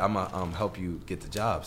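ordinary talk

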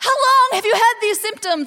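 high, loud, shouted, called-out delivery.

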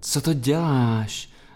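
whispered on a breath. Reading the pepper's reply as Jakub hugs him from behind: whispered on a breath. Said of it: "zašeptal výdechem paprik nijak přísně".

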